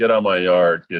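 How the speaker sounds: plain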